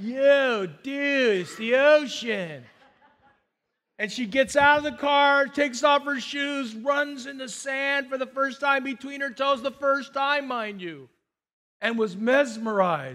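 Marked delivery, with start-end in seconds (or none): 0.0-2.6 very slow, drawn-out delivery, every word stretched. Retelling a niece's first sight of the ocean: Crush voice.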